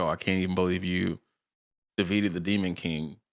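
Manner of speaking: snide, taunting, mocking sarcastic tone. Retelling how one character mocked another: imitating a mocking tone. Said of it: "the gall to mock her".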